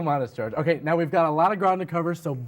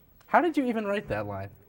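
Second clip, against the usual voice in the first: ordinary delivery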